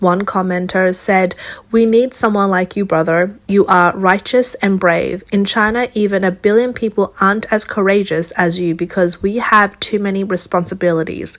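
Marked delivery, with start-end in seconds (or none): none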